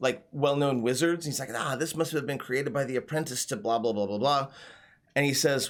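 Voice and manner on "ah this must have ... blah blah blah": low, half-aloud muttering to oneself. Voicing a middleman examining a scroll through a monocle: muttering to himself. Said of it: "sort of mutter to himself".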